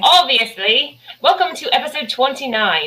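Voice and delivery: put-on Scottish accent. Opening a podcast episode, a host shows off a Scottish accent. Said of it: "This is Scottish".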